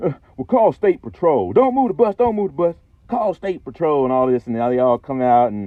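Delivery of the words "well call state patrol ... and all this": irate, high, angry, insistent voice. Retelling a bus accident, the speaker quotes the insurance man, imitating an angry man. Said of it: "he gets mad".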